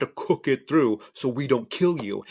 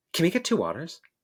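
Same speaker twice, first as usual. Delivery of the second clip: mock curt, rude, brusque voice; 4 semitones higher than usual. Retelling how a customer at the bar asked for waters: imitating a rude customer. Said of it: "just the way she asked for two waters".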